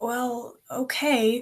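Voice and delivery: grudging tone. Giving in after being asked not to come along, reluctant.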